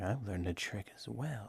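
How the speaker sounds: very quiet, barely audible mutter under the breath. A player character at a bar table, before casting Detect Magic, muttered under breath. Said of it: "Just sort of under my breath be like".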